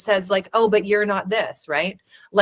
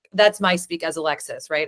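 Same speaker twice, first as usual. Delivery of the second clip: normal talking voice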